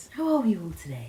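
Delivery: gentle, soft, polite telephone voice. Showing how she talks when answering phone calls, in her phone voice. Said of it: "I love a phone voice".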